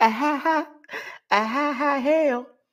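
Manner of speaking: high, fake mocking laugh.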